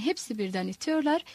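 ordinary delivery

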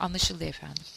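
plain reading voice

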